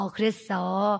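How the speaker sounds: kind, gentle, soft-toned talk.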